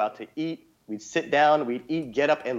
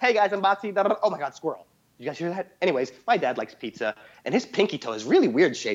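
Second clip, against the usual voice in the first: fast, hyper, jumpy, scatterbrained rambling chatter; 4 semitones higher than usual. Retelling a friend's viral video to a listener, imitating Boxy talking fast. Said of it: "talking all fast".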